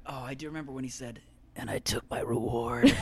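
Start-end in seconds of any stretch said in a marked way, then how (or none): 1.6-3.0 low, deep character voice, dropped right down. Answering a request to do the low Jack Donaghy voice. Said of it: "can you do the low voice?".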